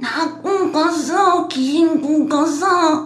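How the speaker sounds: put-on old grandma voice. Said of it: "애기 목소리랑 할머니 목소리 두 버전으로".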